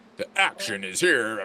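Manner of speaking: put-on old-school movie trailer announcer voice. Explaining the voice that every movie began with years ago, in a movie trailer guy voice. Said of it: "the movie trailer guy. Every movie began with this guy".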